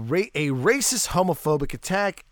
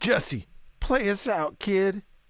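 put-on slow, pitched-up cool-kid swagger drawl; 5 semitones higher than usual. Retelling own earlier request to jesse: imitating acting like a cool kid. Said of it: "trying to be all cool kid".

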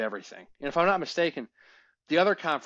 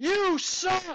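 put-on very high-pitched, jeering, taunting kid's scream. Retelling yelling at the UMD goalie as a seventh grader: imitating own past screaming. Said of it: "there's this twelve-year-old kid screaming".

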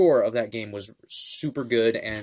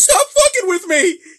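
very high, shrill, shrieked yelling; 8 dB louder than usual. Telling how the man whose window they hit with a branch reacted, retelling a yell. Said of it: "Just yelling".

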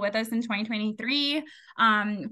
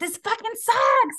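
very high, loud, shrill, fed-up frustrated scream; 12 semitones higher, 6 dB louder than usual. Telling about getting advice from their mom in her car, retelling their own scream. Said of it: "I screamed".

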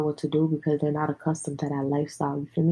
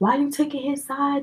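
shrill, very high, acted-out yelling outburst; 11 semitones higher than usual. Recounting an argument, the speaker quotes herself answering her mom: retelling own yelling. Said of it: "like I was already yelling at my brother".

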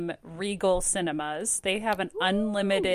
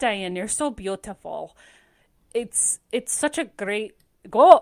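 Scottish accent, higher and louder; 2 semitones higher, 6 dB louder than usual. Speaker tries an accent someone described to them, Scottish accent. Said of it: "That's Scottish".

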